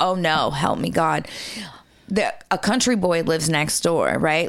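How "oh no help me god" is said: acted-out panicked voice, slower. Recounting running up and down the stairs alone at home, retelling panic. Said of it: "i'm like panicking".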